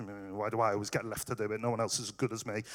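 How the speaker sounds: low, soft, fast muttering.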